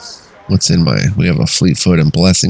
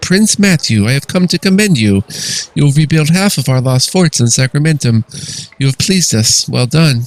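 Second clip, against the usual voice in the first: momentous, regal voice, pitched up; 8 semitones higher than usual. Narrator voicing Queen Sharon's message to Prince Matthew through the portal, momentous voice. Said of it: "She says in her momentous voice".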